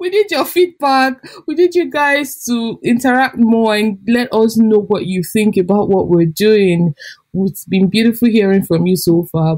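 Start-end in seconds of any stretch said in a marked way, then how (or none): 0.0-7.9 pleading tone, Nigerian English accent. Podcast host closing the episode, asking listeners for feedback: nigerian accent. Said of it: "I've actually switched to my Nigerian accent right now".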